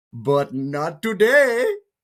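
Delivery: put-on deliberate Indian accent, pitched high. Retelling what a man said while the speaker stared at him, Indian accent. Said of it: "I will do the accent".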